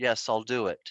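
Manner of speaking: put-on flat, expressionless deadpan, low voice. Speaker recalling answering an order in the military: retelling a flat, deadpan reply. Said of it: "I just said it in a very flat, deadpan manner".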